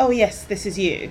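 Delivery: ordinary delivery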